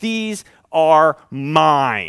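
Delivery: acted, strong, forceful, indignant voice, "mine" drawn out. Speaker quotes the one who took the children on his lap, voicing strong indignation. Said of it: "the strength in his voice and his indignation".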